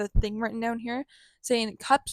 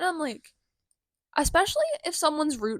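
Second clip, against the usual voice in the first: voice cracking upward, breaking mid-line; 5 semitones higher than usual. Speaker talks to listeners about people, voice cracking. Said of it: "my voice cracked a little there".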